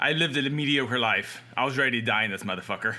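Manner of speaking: normal talking voice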